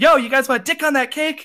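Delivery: high-pitched yell. Retelling calling out to the guys from the back: retelling a yell. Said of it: "I just yell out".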